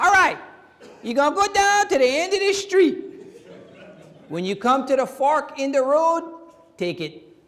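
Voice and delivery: sat-nav style voice in Cajun accent, pitched way up. Joking about navigation voices, giving driving directions in a Cajun GPS voice. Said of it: "a Cajun voice in that thing".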